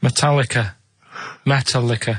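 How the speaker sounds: metallica pronounced like "metal liquor". Saying the answer on request: saying Metallica like "metal liquor". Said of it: "Make Metallica sound like metal liquor".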